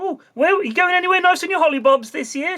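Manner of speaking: very high, bright, overly chirpy office lady voice. Imitating the lady in the office: imitating an overly chirpy office lady. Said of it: "overly chirpy".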